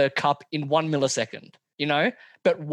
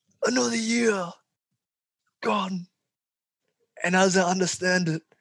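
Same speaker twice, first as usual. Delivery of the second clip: put-on wise old headmaster voice; 4 semitones higher than usual. Doing a movie line for a listener to guess, in a Dumbledore impression. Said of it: "my Dumbledore impression".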